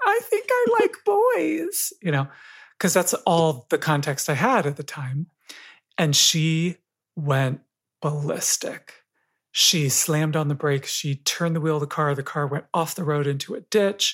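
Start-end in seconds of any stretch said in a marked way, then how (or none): 0.1-1.9 very high, squeaky voice that breaks and changes. Retelling what they told their mom at eleven, driving home from church, in a changey squeaky voice. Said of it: "in my, you know, changey, squeaky voice".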